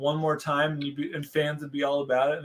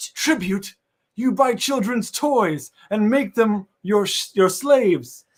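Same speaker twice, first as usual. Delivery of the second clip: very loud, high-pitched heroic shout at full blast; 6 semitones higher, 9 dB louder than usual. Trading lines with another character, the speaker voices Richter: Richter voice. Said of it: "I'm doing Richter's voice".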